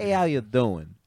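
slight New York accent. Taking turns doing the greeting, a little New York accent. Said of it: "That was like a little New York kind of".

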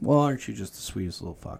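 ordinary talk

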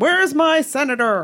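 big, loud, booming full voice, bellowing. Recall Teddy Kennedy coming into Orrin Hatch's office after the dog, in Teddy Kennedy's booming voice. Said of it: "his booming voice".

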